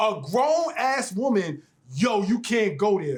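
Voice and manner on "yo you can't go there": said aggressively. Quoting what to tell a partner, said aggressively. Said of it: "You keep saying it so aggressively".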